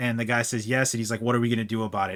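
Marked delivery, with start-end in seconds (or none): 1.2-2.2 mock-menacing, threatening tone. Recapping a TV scene, acting out a man's question in a mock-menacing tone. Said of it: "In this very menacing tone".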